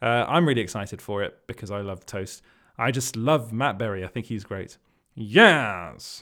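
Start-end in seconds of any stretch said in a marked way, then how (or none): 5.1-6.2 loud belted exclamation, yes stretched out long. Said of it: "Sorry, I could do that all day".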